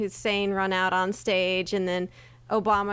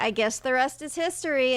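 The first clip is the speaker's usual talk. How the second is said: high line reading delivered with full gusto; 5 semitones higher than usual. Retelling a line from a school play: imitating own gusto delivery. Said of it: "I said it with a gusto".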